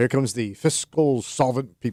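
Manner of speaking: usual speaking voice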